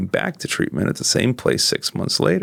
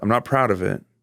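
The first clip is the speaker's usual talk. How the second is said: plain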